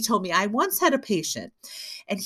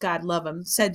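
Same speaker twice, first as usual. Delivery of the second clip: ordinary delivery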